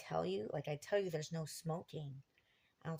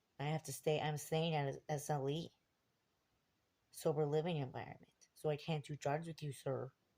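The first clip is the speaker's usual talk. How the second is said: ordinary talk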